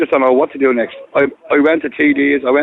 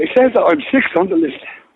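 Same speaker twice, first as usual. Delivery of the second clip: sounding upset, higher pitch; 5 semitones higher than usual. The speaker answers a question about his place on the housing list, upset. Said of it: "You sound upset".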